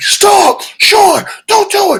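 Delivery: very high, loud shrieked scream. Retelling how his artist screamed at him to stop, imitating someone screaming. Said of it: "my artist was screaming at me".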